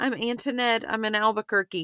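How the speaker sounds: put-on frantic, quick, high little-girl voice rushing.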